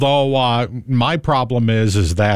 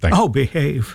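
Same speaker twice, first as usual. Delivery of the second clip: put-on swinging English spy voice, higher; 3 semitones higher than usual. Joking with the co-host after a Doctor Evil bit: Austin Powers voice. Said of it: "I knew you would go back to actual Austin Powers".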